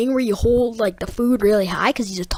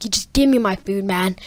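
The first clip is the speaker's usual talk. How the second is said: normal talking voice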